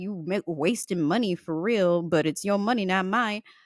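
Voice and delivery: muttering under breath. Retelling what the cashier said while ringing up cat bowls: imitating someone muttering under breath. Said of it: "she says under her breath".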